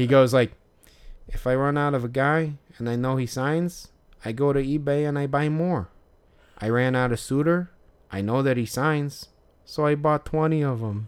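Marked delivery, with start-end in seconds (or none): 1.3-11.1 put-on light touch of Chicago accent in the vowels. Retelling what a collector said about buying more cards: imitating Dennis's slight Chicago accent. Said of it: "his slight, like, Chicago accent".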